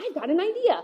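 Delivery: eager, enthusiastic, excited, upbeat delivery. Showing how to give someone a reason for action, sounding excited and upbeat. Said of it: "Hear how excited I am?".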